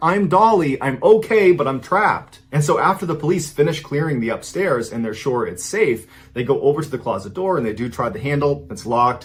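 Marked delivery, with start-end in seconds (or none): 0.0-2.4 loud high-pitched yelling. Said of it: "she yells back".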